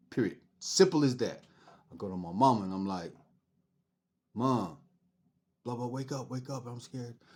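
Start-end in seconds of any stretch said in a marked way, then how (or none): 4.4-7.2 scared crying plea, quieter. Retelling waking the mom early in the morning: imitating own crying plea. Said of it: "I shook my mom and I'm crying".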